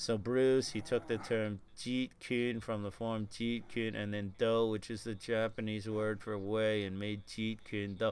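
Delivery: low, flat, soft, level monotone. Recalling Jesse in an interview: Jesse's flat monotone. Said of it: "Jesse kind of talked in this kind of like monotone".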